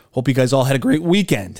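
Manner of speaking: voice cracking. Welcoming listeners back to the episode, voice cracking. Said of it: "That's a voice crack".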